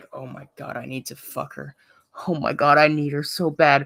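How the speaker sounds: muttered quietly under the breath. Acting out what someone mutters under their breath: muttered under the breath. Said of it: "under your breath".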